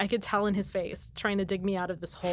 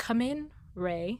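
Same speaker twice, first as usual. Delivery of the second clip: forced calm, composed voice with fear underneath; 3 semitones higher than usual. Retelling a scary movie scene: imitating Venkman's forced calm. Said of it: "he's totally trying to be composed and cool, but he is, like, absolutely, like, terrified".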